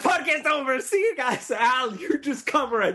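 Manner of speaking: high-pitched, mock breezy tone. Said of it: "They would've been like".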